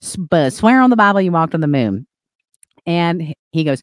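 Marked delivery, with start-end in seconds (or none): 0.2-2.1 laid-on, put-on Southern accent. Retelling a man's challenge to Buzz, quoting him in a put-on Southern accent. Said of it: "He has like this Southern accent".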